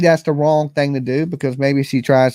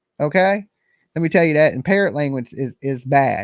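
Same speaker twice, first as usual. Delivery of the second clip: ordinary talk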